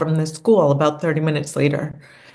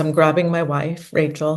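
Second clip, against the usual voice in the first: ordinary talk, nothing marked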